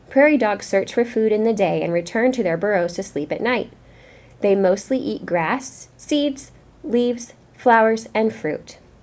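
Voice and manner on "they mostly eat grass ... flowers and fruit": pauses at each comma, pitch falling on "fruit". Reading a prairie dog passage aloud, pausing at each comma, falling at end. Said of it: "I paused after every comma, and at the end my voice went down? It didn't go up to sound like a question".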